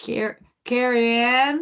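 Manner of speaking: put-on twangy accent. Imagining the other speaker saying a name, in an attempted twang. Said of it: "saying that with such a twang".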